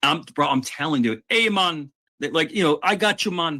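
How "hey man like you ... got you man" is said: convincing put-on Jamaican accent, pitched up. Retelling what a man said about getting the bike back, imitated Jamaican accent.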